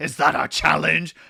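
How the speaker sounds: rough, loud yelling. Rereading a chat line the way Mufasa yells at Scar: Mufasa yelling at Scar. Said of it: "I heard fucking Mufasa's voice".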